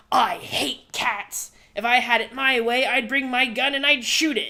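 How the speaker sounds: wicked, villainous evil woman voice. Retelling what a woman said about a cat, evil woman voice. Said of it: "brought out the evil woman voice".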